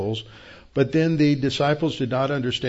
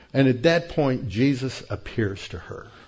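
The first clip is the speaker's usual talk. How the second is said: ordinary talk, nothing marked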